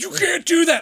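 very high, shrill, loud scolding holler. Retelling how a homeless man yelled at him for jaywalking: imitating someone yelling. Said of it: "This homeless guy starts yelling".

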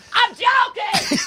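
very high-pitched voice, far from the microphone. Repeating the impersonation after being told to go off mic: Dan impersonation. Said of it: "You gotta go off mic for it".

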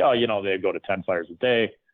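put-on nonchalant, casual tone. Retelling a remark about crews going to ten fires a day: imitating Danny Murphy, nonchalant. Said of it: "he just says it so nonchalantly".

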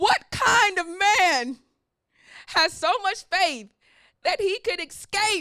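excited voice, cracking and halting mid-phrase. Preaching about Enoch's faith, the speaker asks this with a cracking voice. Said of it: "My voice is cracking".

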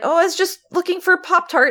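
very high voice, terror poorly hidden. Speaker retells what a man said when caught with the cabinets open, imitating a terrified voice. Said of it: "in like the most terrified voice".

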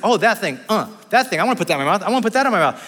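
put-on talking like a little baby. Describing what a one-year-old sees and wants: imitating a one-year-old baby. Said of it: "he's like".

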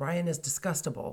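normal talking voice

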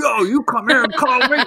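very high, pushy, aggressive hollered shout. Explaining why shouting for someone is aggressive, the speaker acts out a mock aggressive shout. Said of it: "you're already starting out aggressive".

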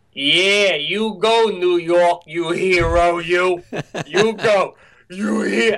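put-on slow, unhurried, high-pitched Boston accent. Retelling what the guy behind him said after he hit a curb: Boston accent. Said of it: "in just this perfect Boston accent goes".

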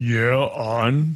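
deepest possible voice. Talking about a band, the speaker tries the lowest voice possible. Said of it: "that's as low as I could talk".

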